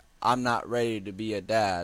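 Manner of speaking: plain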